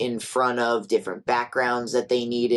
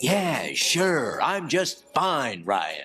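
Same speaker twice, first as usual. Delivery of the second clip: put-on surfer hippie voice. Describing the talking dog from Power Rangers, doing a laid-back surfer hippie Jeb voice. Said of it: "more like laid back surfer hippie".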